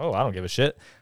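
ordinary delivery

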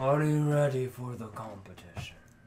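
deep, booming godlike voice. Voicing Talos greeting the party through the hallways: booming voice of Talos. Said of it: "You hear a voice booming through the hallways".

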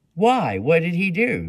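loud, insistent, pressing, demanding tone. Narrator reads the woman behind the glass questioning a visitor, demanding. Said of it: "demanded the woman, glaring at Mary".

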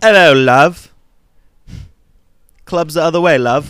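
very loud, high, booming put-on marbly British accent. Imitating Matt Smith in a movie, with a Matt Smith British accent. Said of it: "Matt Smith has got the British marbles in his mouth and this is like".

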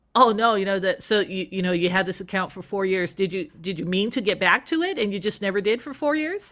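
plain

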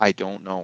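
imitated soft quiet speech. Retelling a crying girl's answer about Jesus: imitating someone speaking quietly and softly. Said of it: "really quietly and softly".

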